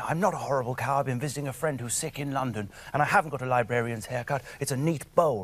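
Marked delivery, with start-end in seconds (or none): none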